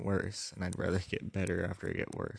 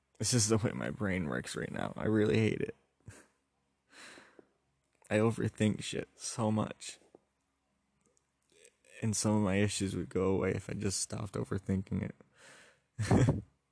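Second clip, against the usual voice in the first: choked up voice, on the verge of crying; 4 dB louder than usual. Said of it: "I'm sorry if you can hear me, like, be choked up".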